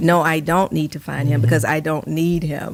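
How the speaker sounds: ordinary talk, nothing marked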